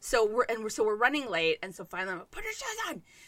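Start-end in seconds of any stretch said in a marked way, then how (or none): 2.3-3.0 very high, exasperated shouted yell. Retelling the moment of running late, imitating own yelling. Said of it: "and I'm yelling".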